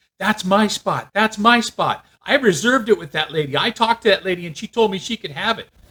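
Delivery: angry, high-pitched screaming tirade. Telling about a parking spot dispute, the speaker quotes a woman, retelling a woman screaming. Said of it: "she is just screaming at me".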